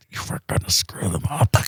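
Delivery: put-on gritted-teeth voice. Retelling what she said to him in the blind, through gritted teeth. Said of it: "she's got her teeth grit".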